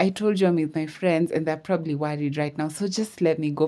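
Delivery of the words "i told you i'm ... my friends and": ordinary delivery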